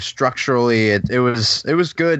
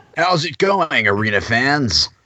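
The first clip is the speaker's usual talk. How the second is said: rock station DJ patter, rock jock radio voice; 3 semitones higher than usual. A program co-host introduces themselves to arena football fans in a rock jock radio voice. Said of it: "That's my new rock jock voice".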